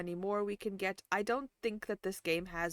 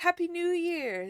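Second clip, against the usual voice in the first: sudden, very loud, pitched-up burst at full volume; 10 semitones higher, 7 dB louder than usual. Greeting the chat for the new year, very loud. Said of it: "I said that was very loud".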